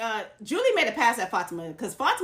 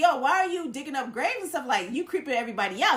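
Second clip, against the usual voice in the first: plain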